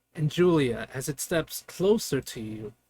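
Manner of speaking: ordinary delivery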